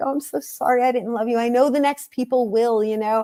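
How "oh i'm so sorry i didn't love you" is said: acted-out crying, apologetic and tearful. Retelling what they said to a plant they had neglected, retelling a tearful apology. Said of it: "I'm crying".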